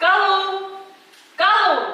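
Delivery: shouting. Calling out to Galu, who had to leave, yelling. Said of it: "Why are you yelling?".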